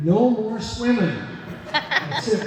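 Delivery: loud, slow delivery while laughing.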